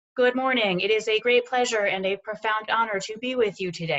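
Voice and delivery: awkward, stiff, stilted, formal podium-style delivery. Speaker mimicking how people talk behind a podium, mock stilted formal speech. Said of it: "very stilted".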